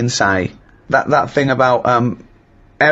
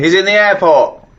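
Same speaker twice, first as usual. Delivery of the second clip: put-on fuming shout, high and angry; 6 semitones higher, 3 dB louder than usual. Retelling shouting at a loud phone talker in the airport: retelling a shout. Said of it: "and I shouted".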